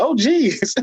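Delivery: very high-pitched cartoonish voice. Retelling own reaction to a reality show moment: Morty voice. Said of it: "I was sound like Morty out there".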